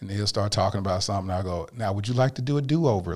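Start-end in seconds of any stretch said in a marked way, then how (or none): 1.8-3.1 put-on calm, trained-sounding voice. Retelling talking to an angry foster child in trained calm voice: imitating own past foster-care-training talk. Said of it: "What in the world is this voice?".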